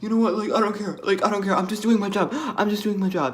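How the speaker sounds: worked-up, frantic, freaking-out outburst. Retelling what a man at a festival said: imitating someone freaking out. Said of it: "this guy starts freaking out".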